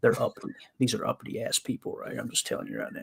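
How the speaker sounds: hushed, breathy, secretive whisper. On a cliff line in Chattanooga, a streamer speaks so nearby people won't hear: whispering. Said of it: "I'm whispering because I don't want them to hear me".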